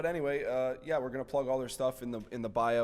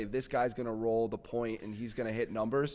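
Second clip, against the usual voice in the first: ordinary talk, nothing marked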